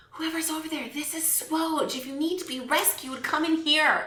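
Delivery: hushed whisper. A character leans down and speaks through a keyhole to voices beyond a door: whispering. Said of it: "I whisper in the keyhole".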